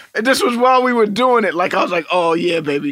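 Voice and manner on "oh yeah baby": put-on slurping sounds. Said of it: "Why are you doing slurps?".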